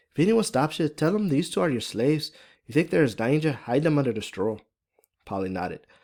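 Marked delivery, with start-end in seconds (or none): 0.2-4.6 put-on higher-pitched, thick, strong Irish accent. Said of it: "Fiona's, uh, Irish accent is pretty thick and strong".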